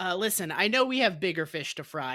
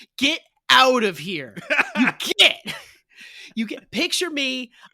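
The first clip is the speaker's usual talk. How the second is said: very loud, swooping hillbilly yell; 6 semitones higher, 9 dB louder than usual. Telling coworkers who find the podcast episode to leave, as a hillbilly yelling. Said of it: "I am a hillbilly yelling you".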